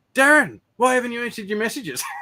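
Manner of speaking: put-on very high, demanding, nagging yell. Retelling to Darren how the speaker yells at him, mock yelling at Darren. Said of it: "Because you keep yelling at me".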